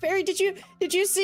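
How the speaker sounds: tearful, distressed, pleading tone. Voicing a character asking people about a fairy, tearful and distressed. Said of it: "with tears in her eyes".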